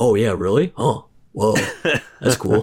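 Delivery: earnest, credulous host-style reactions, taking it seriously. Imagining a podcast host reacting to a rant: Joe Rogan impression. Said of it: "Joe Rogan would be like".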